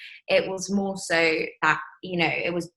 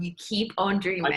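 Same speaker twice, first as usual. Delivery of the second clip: usual speaking voice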